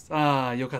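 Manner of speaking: breathed-out relieved sigh. Japanese lesson example, said like a sigh of relief. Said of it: "Something like that. Like a sigh of relief that it was so nearby".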